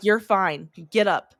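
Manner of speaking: slow, irritated, angry, no-nonsense delivery. Retelling how an angry general ordered a soldier up: imitating an angry yell. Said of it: "he was pissed".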